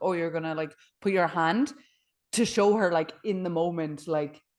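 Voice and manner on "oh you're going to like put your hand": put-on mocking, belittling voice. Retelling a friend who went into character during a class: imitating someone belittling. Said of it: "started being like".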